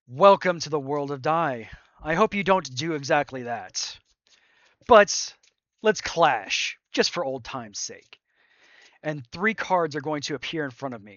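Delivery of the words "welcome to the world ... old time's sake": big, loud, booming proclamation. In the battle, addressing the others across the plains, loud, booming voice. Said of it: "in this loud, booming voice".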